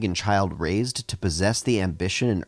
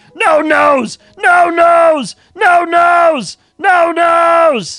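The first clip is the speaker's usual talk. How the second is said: shrill, very high, loud, slow, drawn-out booming yell; 14 dB louder than usual. Standing at the table and pointing at the DM, yelling in Fred Fredburger voice. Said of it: "yell in my Fred Fredberger voice".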